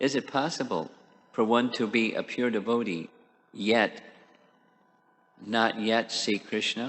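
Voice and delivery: slow, deliberate, each word carefully spaced out. Repeating a question to the other speaker, speaking slowly. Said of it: "it again, slowly".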